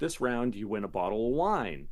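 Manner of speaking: ordinary talk, nothing marked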